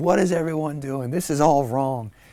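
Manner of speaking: loud, shrill, furious angry scream. Acting out walking into a party angry at everybody: pretend angry screaming. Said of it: "just screaming".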